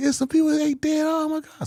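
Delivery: very high, shrill screaming. Telling a story about a car, reenacting how the speaker screamed: retelling own screaming. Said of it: "I started screaming like".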